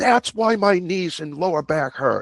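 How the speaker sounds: sudden, high, blurted-out yelling outburst. Retelling what a guy at the gym called out: imitating someone yelling out. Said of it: "he yells out".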